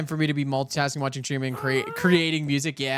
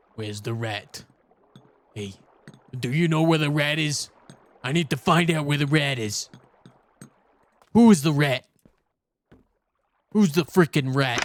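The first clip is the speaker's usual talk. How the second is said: put-on tough New York accent; 3 dB louder than usual. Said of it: "in a New Yorker mob accent".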